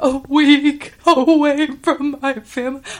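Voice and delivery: acted very slow, high, loud trembling little voice. Retelling what she said during a week on the water, imitating her trembling voice. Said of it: "she's got that little trembling voice".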